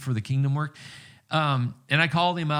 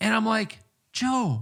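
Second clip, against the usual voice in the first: ordinary delivery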